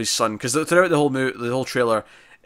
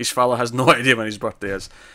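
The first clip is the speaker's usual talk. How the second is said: normal talking voice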